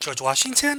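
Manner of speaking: Washington lifted with rising pitch. Demonstrating a raised inflection that sounds like a question: pitch rises at end of Washington. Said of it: "How it goes up? It kind of sounds like a question".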